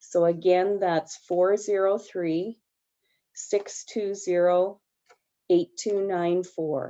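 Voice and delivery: slow, deliberate, careful pace. Giving a contact number to people in a hearing, repeating it so they can note it down. slow, deliberate pace. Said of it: "I'll say it slowly".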